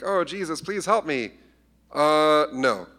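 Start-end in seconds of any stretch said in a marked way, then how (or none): 0.0-1.3 desperate, high-pitched, pleading, begging tone. Retelling a Bible story, the speaker acts out a woman pleading with Jesus, imitating a woman begging. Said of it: "This lady's out there begging".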